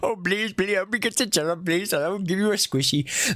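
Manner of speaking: mocking, put-on Indian accent, played for laughs. Asking someone why they begged in an Indian accent, then repeating it in an Indian accent. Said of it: "why do you just do that in an Indian accent?".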